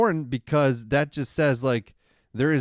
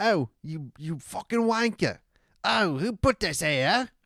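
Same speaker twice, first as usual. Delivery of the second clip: big creature voice talking in a British twang; 4 semitones higher than usual. Imagining what a British Bigfoot would say: British Bigfoot voice with British twang. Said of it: "like a British little twang with the, with the roar".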